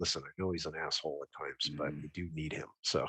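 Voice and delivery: low, hushed half-whisper under the breath. Voicing a character who quietly urges a companion: half-whispering under breath. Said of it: "I kinda whisper under my breath to her".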